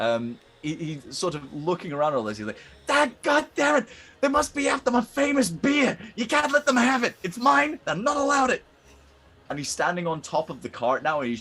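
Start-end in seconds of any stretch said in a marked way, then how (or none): 2.8-8.6 very high, loud little-creature hollering shout. Voicing a kobold shouting at attackers: kobold shouting like Danny DeVito. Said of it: "this kobold shout out".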